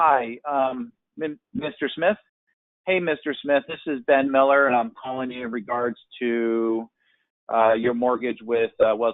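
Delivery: halting, hesitant, slow, stumbling, full of ums and uhs. Demonstrating a phone call opening full of hesitation, sounding hesitant with fillers. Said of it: "all that hesitation".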